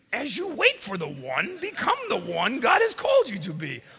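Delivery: bad, very high, swooping, botched put-on alien voice. Speaking to the Star Wars fans listening, bad Yoda impression. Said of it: "That was the worst Yoda impersonation".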